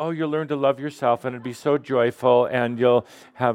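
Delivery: normal talking voice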